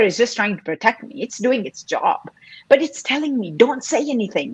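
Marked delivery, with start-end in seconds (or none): 3.5-4.5 loud voice full of fear. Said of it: "my voice of fear, loud".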